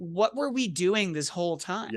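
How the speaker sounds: ordinary delivery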